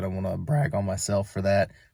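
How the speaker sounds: voice cracking. Speaker showing a fence install, bragging on themselves, voice cracking. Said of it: "That was a voice crack".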